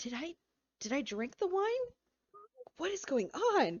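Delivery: high-pitched, lost, confused, bewildered voice. Voicing a character stunned by what she sees: lost and confused. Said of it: "she just seems very, very lost".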